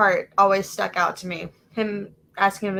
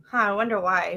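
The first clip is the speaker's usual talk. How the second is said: plain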